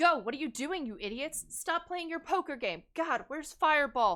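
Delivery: high, bossy, slightly barked delivery. Voicing a character rushing teens and adults to safety: barking orders. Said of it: "she's kind of barking orders a little bit".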